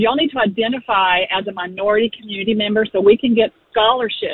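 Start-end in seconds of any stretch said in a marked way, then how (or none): none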